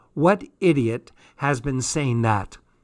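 ordinary delivery

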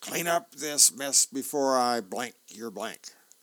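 loud put-on cartoon voice. Describing a comic, the speaker voices Jeremy imitating Mom: Popeye impression. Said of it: "does his impression of Mom in the next frame as Popeye".

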